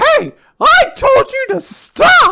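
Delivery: stern scolding, very high, slow, loud, drawn out. Imitating a character disciplining his child: imitating Gakuro disciplining his child. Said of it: "that impression has, not that impression, that voice".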